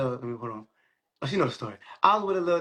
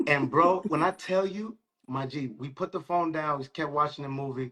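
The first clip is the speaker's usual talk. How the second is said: ordinary talk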